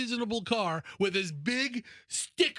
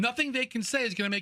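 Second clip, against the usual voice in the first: ordinary talk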